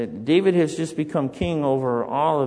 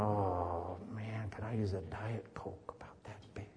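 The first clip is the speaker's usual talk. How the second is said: acted longing sigh, much quieter and lower; 5 semitones lower, 16 dB quieter than usual. Speaker likening himself to David sighing, acting out a longing sigh. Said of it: "David just kind of sighs".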